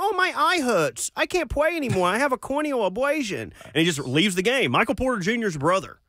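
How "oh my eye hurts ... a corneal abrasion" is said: put-on child's voice, much higher pitch. Act out a player with a hurt eye leaving the game, in a put-on kid voice. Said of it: "You like my kid voice?".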